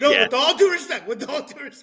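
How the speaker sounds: shrill, very high, frantic, repeated screaming. Retelling a movie scene: imitating Ricky Bobby screaming. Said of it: "he screams it".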